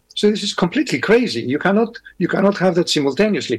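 ordinary delivery

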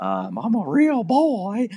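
very high, slow, drawn-out, swooping sing-song voice. Telling about a movie character's funny voice, demonstrating it: Pinocchio voice. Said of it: "So we do that voice all the time".

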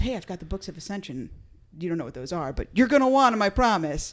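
plain

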